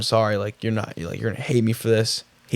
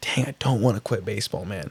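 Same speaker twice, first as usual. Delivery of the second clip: tearful voice, quieter; 6 dB quieter than usual. Retelling staring at the phone before texting the coach: imitating own crying.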